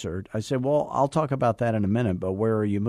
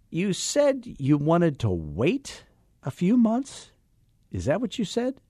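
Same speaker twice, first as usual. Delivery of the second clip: high, swooping, disbelieving incredulous tone; 8 semitones higher than usual. Showing how an agent questions a client: incredulous question voice. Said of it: "You have to have that".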